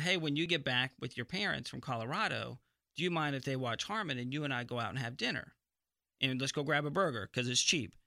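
ordinary talk, nothing marked

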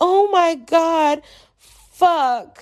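mock very slow, high, full-throated shout. Speaker retells a moment behind very thin walls, retelling their own top-of-lungs shout. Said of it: "at the top of my lungs".

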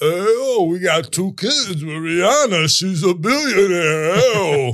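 boastful, bragging tone. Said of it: "Rocky Balboa talking about fucking [name]".

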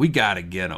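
plain

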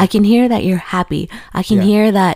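ordinary delivery

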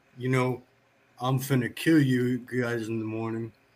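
put-on quiet voice. Retelling a cellmate's line from his bunk late at night: imitating someone speaking quietly. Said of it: "he just real quietly".

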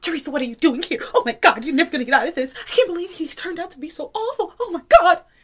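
put-on high, rushed, frantic babble, barely decipherable. Recapping an episode scene, imitating Teresa talking frantically to herself. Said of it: "she was so frantic".

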